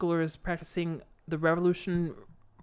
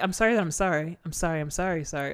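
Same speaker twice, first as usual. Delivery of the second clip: mock anxious, paranoid-sounding woman voice. Retelling how a paranoid character kept apologizing: imitating a paranoid woman apologizing. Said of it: "she was super paranoid".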